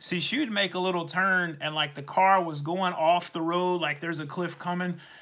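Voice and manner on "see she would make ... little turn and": usual speaking voice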